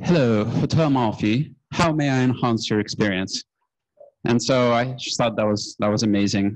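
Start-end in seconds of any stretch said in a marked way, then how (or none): 0.0-3.4 imitated British accent. Retelling how a hotel clerk answered the phone, in a british accent. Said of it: "in this British accent".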